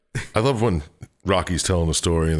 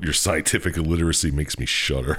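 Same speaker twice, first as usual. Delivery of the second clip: ordinary talk, nothing marked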